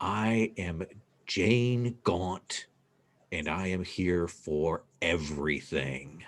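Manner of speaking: slow, ghostly voice from beyond the grave. Voicing a figure who names herself and her purpose: voice from the grave. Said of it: "you hear this voice from the grave say".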